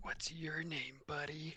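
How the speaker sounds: whispering. Playing a character leaning over a pinned captive: whispering in character. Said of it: "I'll whisper into the guy".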